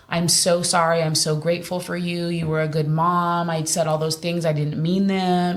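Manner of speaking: ordinary talk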